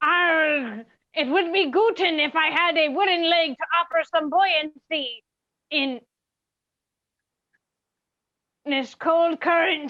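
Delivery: fake Swedish-accented speech. A player starts a scene everyone must play with swedish accents, in a swedish accent. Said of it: "you all will have Swedish accents".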